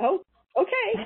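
high, slow, surprised realizing tone.

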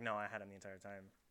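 ordinary talk

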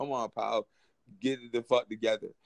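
ordinary delivery

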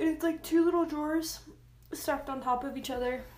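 words said mid-yawn. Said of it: "Sorry, I'm yawning".

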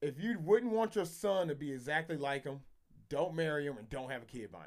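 ordinary talk

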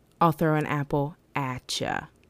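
plain

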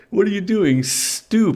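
very high, shrill, flustered embarrassed cry. Narrator reads the baby protesting as his father undoes his nappy; embarrassed cry. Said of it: "Richie cried, his face growing red hot in embarrassment".

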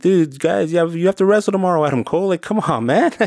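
acted shouting. Speaker recalls watching a wrestler's match, re-enacting shouting at the tv. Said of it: "I just was shouting at the TV".

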